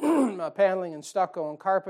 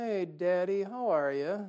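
mock, very slow, sugary-sweet, drawn-out voice; 4 dB quieter than usual. Parent imitates his kids greeting him, imitating kids' sweet voice. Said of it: "they say it really nice and sweet".

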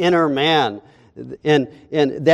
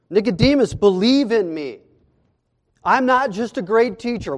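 mock-pleading, acted-out begging tone; 6 semitones higher than usual. Retelling one man's words to another, acting out a plea. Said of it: "Jesus is pleading with Nicodemus".

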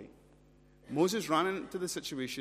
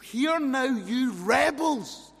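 very slow, furious, angry shout; 11 semitones higher, 8 dB louder than usual. Retelling how Moses gets angry at the people: imitating Moses shouting angrily. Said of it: "he starts shouting at the people".

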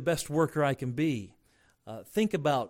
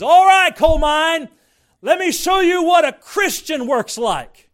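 very loud, high, top-of-the-lungs yell; 14 semitones higher, 15 dB louder than usual. Retelling a coal miner's call at the start of work: imitating a man yelling. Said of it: "he would yell at the top of his lungs".

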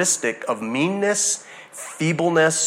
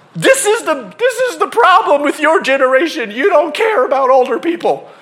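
mock furious, very high-pitched angry shouting; 11 semitones higher, 6 dB louder than usual. Retelling two people arguing, voicing one of them: imitating angry yelling. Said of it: "these two people are yelling at each other".

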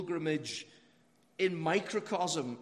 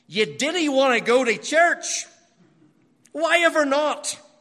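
put-on very loud, heavy Ulster Scots accent, high pitched; 8 semitones higher, 12 dB louder than usual. Act out an elderly grandfather questioning his grandson, in a thick Ulster Scots accent. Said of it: "in his thick Ulster Scots accent".

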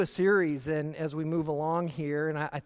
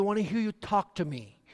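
put-on Spanish-influenced accent, higher pitch; 4 semitones higher than usual.

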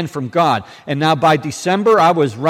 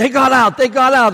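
high-pitched, insistent screaming, words repeated; 9 semitones higher, 3 dB louder than usual. Retelling what a girl said after a car crash: imitating someone screaming. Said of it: "she's screaming".

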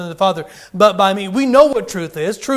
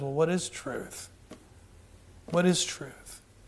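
near-whispered, hushed, breathy musing tone; 3 semitones lower, 15 dB quieter than usual. Acting out a scene of Pilate walking away: saying quietly as Pilate. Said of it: "Pilate kind of walks away and quietly says".

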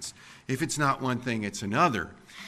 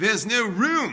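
mock very high, piercing, loud, shrill shout; 9 semitones higher, 5 dB louder than usual. Retelling what a rider on a crowded bus yelled: imitating someone yelling. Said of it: "somebody yells".

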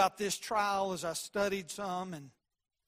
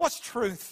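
sneering, scoffing, dismissive brush-off; 3 semitones higher than usual. Retelling how Pilate asked about truth: mock-scoffing as Pilate. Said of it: "Pilate said it in a way that was kind of scoffing".

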